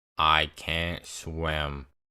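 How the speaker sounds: low, dead-flat, expressionless deadpan monotone. Telling a story, quoting what Ben said, imitating Ben's monotone. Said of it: "he says in the most monotone voice".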